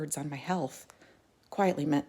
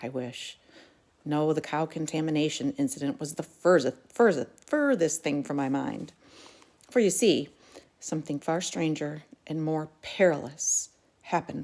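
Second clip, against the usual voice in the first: plain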